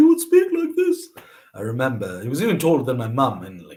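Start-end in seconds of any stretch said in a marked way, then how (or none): 0.0-1.1 very high-pitched, squeaky schoolboy voice. Remembering a very tall boy from your old school, imitating Adam Zaman's very high-pitched voice. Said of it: "he had a very high pitched voice".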